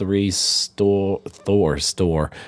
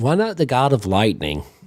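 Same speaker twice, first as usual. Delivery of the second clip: ordinary delivery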